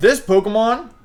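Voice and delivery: voice breaking mid-word, sudden high, loud crack. Speaker who just woke up introduces a Pokemon: voice crack. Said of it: "voice crack".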